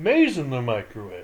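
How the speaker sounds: play-acted offhand, unbothered, nonchalant delivery. Retelling what a man said after closing the thing; imitating a nonchalant tone.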